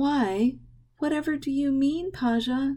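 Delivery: sweet, sugary put-on innocence. A daughter, just woken, answers her father's question: feigned innocence. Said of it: "her voice dripping with innocence".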